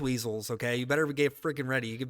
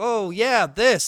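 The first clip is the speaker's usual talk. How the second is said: soft, overly sugary, passive, pitched-up acted tone; 7 semitones higher, 7 dB louder than usual. Complaining that Jeff sugarcoats his opinions, mocking Jeff's sugarcoating. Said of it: "very too sugarcoaty and he's like very passive".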